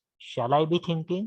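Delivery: normal talking voice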